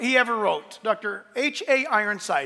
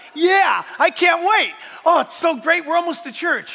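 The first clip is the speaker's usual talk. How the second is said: mock fired-up, eager excitement; 6 semitones higher, 5 dB louder than usual. Acting out someone on the way to church, mock fired-up. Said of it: "he's all fired up about it".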